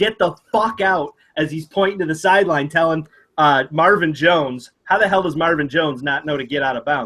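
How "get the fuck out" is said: put-on yell, higher. Retelling the quarterback pointing to the sideline: imitating someone yelling. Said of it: "even though he yells".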